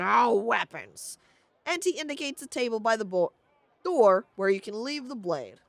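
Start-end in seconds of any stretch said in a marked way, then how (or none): 0.0-1.2 rough, croaky, halting, broken foreign speech. A game master has the first stranger croak in broken common tongue. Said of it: "In broken common tongue, the first croaks".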